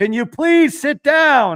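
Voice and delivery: high, slow, loud yell.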